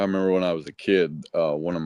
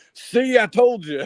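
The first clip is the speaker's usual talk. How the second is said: put-on very high-pitched yell into a microphone; 4 dB louder than usual. Retelling what a man yelled into the mic after his dentures flew out, retelling a yell. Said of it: "he yells in the mic".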